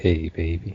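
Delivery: put-on seductive, sexy ladies' man voice. Offering to voice act as a character, sexy dude voice. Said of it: "I could voice act as like the sexy dude".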